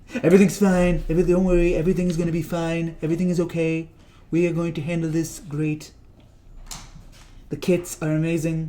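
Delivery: breezy, totally unbothered, unworried tone. Mocking a leader who isn't worried about an outbreak: Donald Trump impression. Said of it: "That's my Trump impression".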